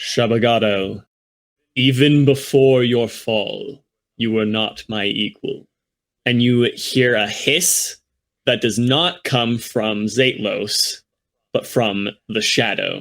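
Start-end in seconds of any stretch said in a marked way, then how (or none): 0.0-5.7 resonant, disembodied voice. Speaking as a voice from a cloud of darkness, addressing shabagado, in a resonating voice. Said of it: "this resonating voice".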